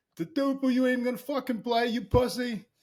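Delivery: hard-edged Philadelphia way of talking. Retelling a taunt he overheard before a game, in a hard Philly accent. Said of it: "I just hear this hard Philly accent".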